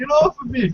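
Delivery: jumping way up into very high falsetto. Retelling a wrestler's scene on a show: imitating Goldust. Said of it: "he's like".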